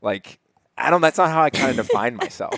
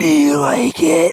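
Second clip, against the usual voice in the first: creepy, very high, rasping and creaky voice; 7 dB louder than usual. Teasing the other speaker about their dirty talk while being crushed, imitating a creepy voice. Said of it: "It was such a creepy voice".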